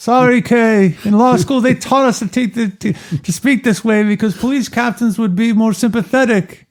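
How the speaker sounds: put-on yelling. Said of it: "Why are you yelling?".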